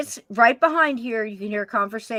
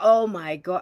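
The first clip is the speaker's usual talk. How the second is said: put-on oh my god said on a laugh; 3 semitones lower than usual. Imitating a voice heard on a recording: imitating a laughing exclamation. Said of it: "it was like on a laugh".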